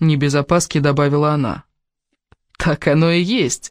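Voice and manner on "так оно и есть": laughing while speaking, much slower. Replying to a woman uneasy about the forest, he exclaims: laughing exclamation. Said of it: "смеясь воскликнул Кевин".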